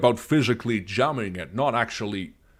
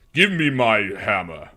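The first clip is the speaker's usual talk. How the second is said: heavy voice pushed out from the chest; 4 dB louder than usual. Trying out Thor, speaking more in the chest: Thor voice, more in the chest. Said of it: "he's kind of more in the chest".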